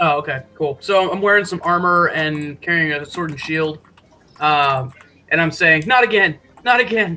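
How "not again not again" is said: tiny, small, quaint little voice. Player voices their armored character's line in a game, in a small, quaint little voice. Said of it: "the small, quaint little voice".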